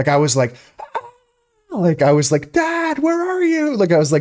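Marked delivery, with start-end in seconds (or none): 2.5-3.8 mock frantic, very high, long, drawn-out panicked scream. Recalling waking to fire alarms and calling for dad, retelling a panicked scream. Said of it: "trying to scream for my dad".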